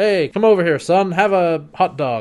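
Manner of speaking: put-on American accent. Retelling a film scene, voicing John's father calling to his son, American accent. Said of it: "American accent".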